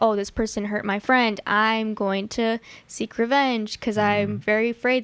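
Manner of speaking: ordinary talk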